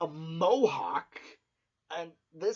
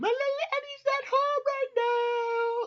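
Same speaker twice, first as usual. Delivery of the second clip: fake mother voice, very high and drawn out. Retelling a character pretending to be his mother at the door: Eddie faking his mother's voice. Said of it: "Eddie's trying to pretend to be his mother".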